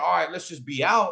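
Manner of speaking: ordinary delivery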